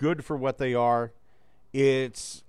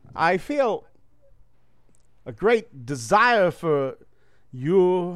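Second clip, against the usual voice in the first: pauses dropped at odd spots mid-sentence; 4 semitones higher, 5 dB louder than usual. Doing an impression with commas where they don't belong: Christopher Walken odd pauses. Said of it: "The trick is you got to put commas where commas don't belong".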